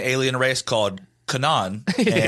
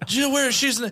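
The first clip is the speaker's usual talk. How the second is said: put-on exhausted old politician voice, higher; 13 semitones higher than usual. Joking about Joe Biden explaining the aliens: Joe Biden impression. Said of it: "best Biden impression I've heard".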